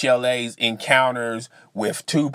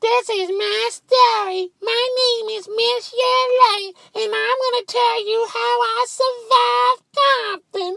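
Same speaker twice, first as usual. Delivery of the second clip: squeaky little voice, very high-pitched. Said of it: "she may have that squeaky voice like".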